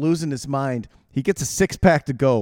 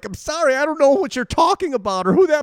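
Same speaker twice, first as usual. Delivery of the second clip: shrill, very high-pitched screaming; 12 semitones higher, 3 dB louder than usual. Retelling what the speaker screamed at a man walking out the door, retelling a scream. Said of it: "I'm screaming at him".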